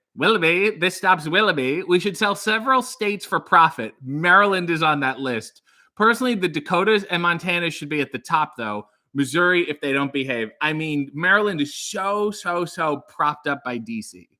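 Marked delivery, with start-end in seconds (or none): none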